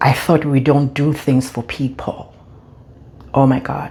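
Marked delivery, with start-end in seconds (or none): 0.0-2.3 imitated muttering under breath. Retelling what a son said going up the steps: imitating son muttering under his breath. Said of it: "I heard him under his breath say".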